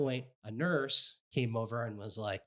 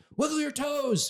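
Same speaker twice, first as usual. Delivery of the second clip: mock, very high, shrill, intense scream; 6 dB louder than usual. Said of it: "They're screaming".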